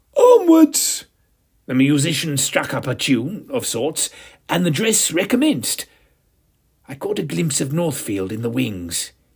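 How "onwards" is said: shrill, high-pitched, loud shout. Clapping his hands, a man restarts the dress rehearsal, shouted. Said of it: "Noel clapped his hands and shouted".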